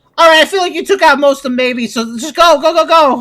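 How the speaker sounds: acted, very high, very loud, hyped, excitable yelling. Mocking the commander who keeps urging them forward: imitating an excitable commander. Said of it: "really excitable".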